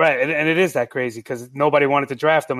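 usual speaking voice

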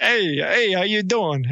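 put-on New York accent.

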